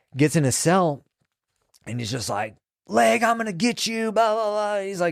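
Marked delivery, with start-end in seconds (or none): 2.9-4.8 acted-out shrill raging yell, very high. Retelling what an angry man yelled from his cell: imitating someone screaming.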